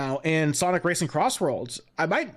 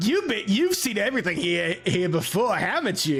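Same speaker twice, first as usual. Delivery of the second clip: dumb, goofy, hammed-up put-on cartoon voice; 3 semitones higher than usual. Voicing a game character's lines aloud, the player uses a Starscream voice. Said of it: "Starscream voice again".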